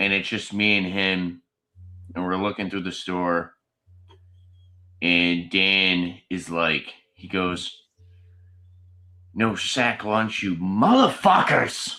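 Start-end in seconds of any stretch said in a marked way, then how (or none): 9.3-11.9 blunt, fairly loud delivery. Retelling what a companion blurted out while browsing a store, quoting it kind of loud. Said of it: "And he said it kind of loud".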